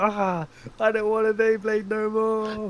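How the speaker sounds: high, freaked-out, panicky outburst. Retelling a scene where Kyoma freaks out: imitating Kyoma panicking. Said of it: "He was panicking".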